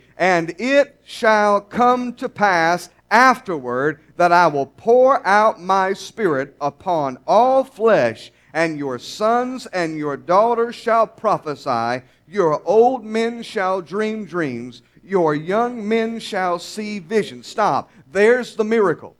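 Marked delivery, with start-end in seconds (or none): 0.2-17.5 slow, measured reading aloud together. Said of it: "Read it with me".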